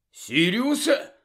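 high, exclaiming call. Narrator reads Ron, just woken in his armchair, calling toward the fireplace, exclaiming. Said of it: "вигукнув він".

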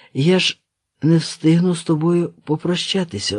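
ordinary delivery

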